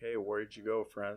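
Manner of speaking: usual speaking voice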